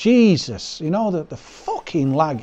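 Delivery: slow, fed-up, exasperated, irate voice. Complaining about lag in a boxing game: irate. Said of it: "Excuse me for getting so irate".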